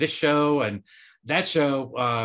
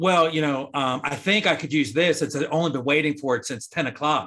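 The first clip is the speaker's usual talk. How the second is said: usual speaking voice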